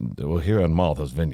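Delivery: fake elderly Southern accent.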